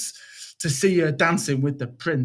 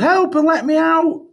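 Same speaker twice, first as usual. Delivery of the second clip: shrill, very high, loud bellowing cry; 12 semitones higher, 7 dB louder than usual. Reading Cinderella, locked in a cellar, calling for help, bellowed. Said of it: "She bellowed".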